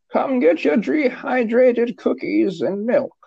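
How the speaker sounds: put-on sweet old granny voice, very high pitched. Asking how Barbara played the commissioner, imitating Barbara's granny voice. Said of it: "as like the granny voice".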